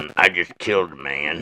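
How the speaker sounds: deep, low character voice. Asked by another speaker to do Sling Blade, quoting its lines: Sling Blade impression. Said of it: "do your sling blade".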